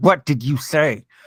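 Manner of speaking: words forced out through gritted teeth, clenched jaw. Game master voicing a woman as the players walk out the door, through gritted teeth. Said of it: "you hear through gritted teeth".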